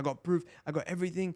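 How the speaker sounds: acted, worked-up, high-pitched, all-out ranting. Retelling a boxer's claims on a call: imitating Ryan Garcia ranting. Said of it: "full ranting".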